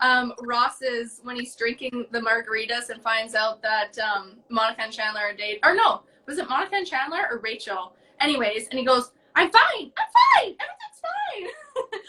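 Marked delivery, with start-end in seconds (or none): 9.3-12.0 very high squeak with drawn-out word fine. Describing a TV scene where a character learns friends are dating, squeaky Ross voice. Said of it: "all squeaky".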